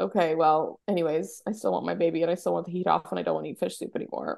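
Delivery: ordinary delivery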